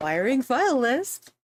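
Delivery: far too delighted, over-gleeful tone. Announcing a step to the group: said with too much glee. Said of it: "you said that with too, with too much, uh, glee".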